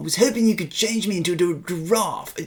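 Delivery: put-on fake British accent. Repeating another player's line, trying again in a put-on British accent. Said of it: "I need to go British".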